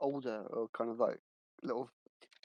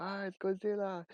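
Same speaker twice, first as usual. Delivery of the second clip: put-on Japanese accent, pitched up; 7 semitones higher than usual. Quoting a line from an Austin Powers scene: put-on Japanese accent. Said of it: "don't try and do the accent again".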